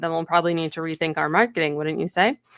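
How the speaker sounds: usual speaking voice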